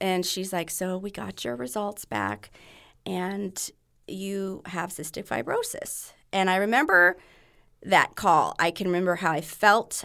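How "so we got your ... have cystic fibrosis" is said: soft, very calm, soothing therapy voice. Retelling the genetic counselor's call with results, imitating her calm therapy voice. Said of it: "she had her therapy voice. The very calm".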